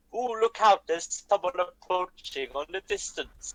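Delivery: put-on botched, not-quite Irish accent. Voicing a figure in a role-play scene for the other players; failed Irish accent. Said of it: "That was not Irish, but we're going to go with that voice".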